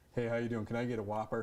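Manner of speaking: put-on American accent. Ordering a Whopper at the counter in a put-on American accent. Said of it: "I find myself putting on an American accent".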